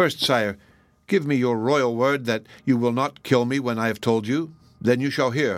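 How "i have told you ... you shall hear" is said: ordinary delivery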